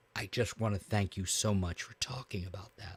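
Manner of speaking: imitated choked-up voice. Retelling how a guy who jumped in thanked the host, imitating barely held-back tears. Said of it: "he's barely holding back tears".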